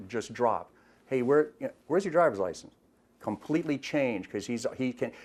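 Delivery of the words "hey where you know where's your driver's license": usual speaking voice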